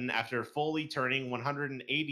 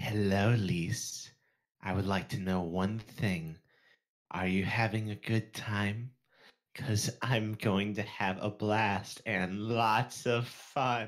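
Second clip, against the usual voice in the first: eerie, unsettling, ominous cartoon creature voice; 4 semitones lower than usual. Reading a message from Cyber aloud, Salad Fingers impression. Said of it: "That's my best impression of like a salad fingers".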